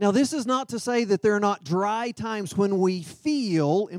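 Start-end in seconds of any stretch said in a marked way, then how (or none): 3.0-3.9 the word feel hit hard. Speaking about how the Holy Spirit speaks, stressing the word feel. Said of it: "emphasis on the word feel".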